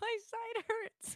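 very high voice breaking up with laughter. Answering another speaker mid-fit, laughing while talking. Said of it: "You laugh so much".

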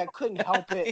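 plain

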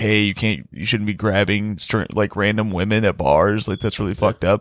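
ordinary delivery

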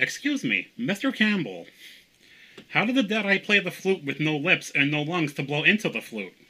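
high, loud, nerdy fanboy voice. Asking a question as a fan at a Q&A, in a nerdy fanboy voice. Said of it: "I have a fanboy voice that I do. We call it the Mr. Campbell voice".

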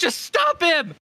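shrill shouting, very high. Running to camp without breaking pace, shouting to the man standing there: yelling. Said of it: "I just yell".

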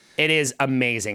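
ordinary talk, nothing marked

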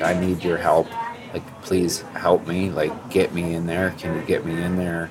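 put-on tearful, pleading male crying voice. Speaker acts out a grown man calling him for help; imitating a man crying. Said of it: "is crying to you".

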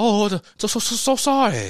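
loud, high, cringey movie-style put-on Japanese accent. Describing a scene where a man talks to a Japanese woman, imitated Japanese accent. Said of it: "he's talking to this Japanese accent".

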